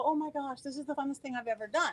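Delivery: ordinary talk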